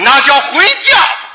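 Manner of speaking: Shandong dialect accent. In a crosstalk routine, answering his partner's question while imitating a Shandong accent. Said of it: "学山东音".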